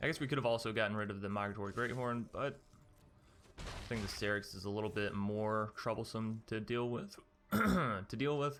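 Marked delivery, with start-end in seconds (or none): 7.5-8.6 sudden voice crack, pitched up mid-phrase. Commentating on a game, the voice cracks mid-sentence. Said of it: "Excuse me, voice crack".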